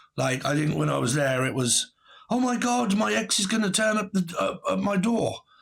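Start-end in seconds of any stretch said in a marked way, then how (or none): 2.3-5.4 high-pitched, flustered, frantic acted-out panic. Retelling what someone said while flipping out: imitating someone flipping out. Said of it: "start flipping out".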